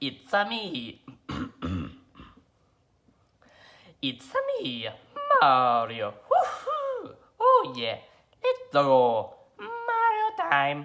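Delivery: high, slow, drawn-out, swooping cartoon voice. Performing prepared character impressions for the Hidden Talents Challenge, do the Mario voice. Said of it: "Mario from Mario Brothers".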